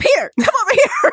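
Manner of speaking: very high calling voice. Retelling how the character summons the ghost: imitating calling a dog. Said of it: "she calls him like he a damn dog".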